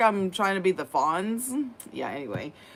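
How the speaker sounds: plain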